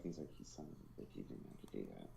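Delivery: whispered, mumbled mutter under the breath. Speaker acts out how another man reacted, mumbled under his breath. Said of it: "he just mumbles under his breath".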